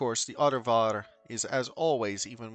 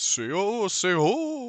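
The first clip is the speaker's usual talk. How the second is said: mocking voice, higher and louder; 9 semitones higher, 5 dB louder than usual. Voicing a character who mimics how another people speak: mimicking voice. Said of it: "she says in a mimicking voice".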